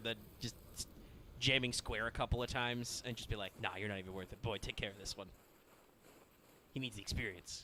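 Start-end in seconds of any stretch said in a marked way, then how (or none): 3.6-7.6 mock offhand, contemptuous, insolent, dismissive tone. Acting out a fighter sizing someone up and brushing him off: imitating insolent dismissal. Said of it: "I love just the insolence of".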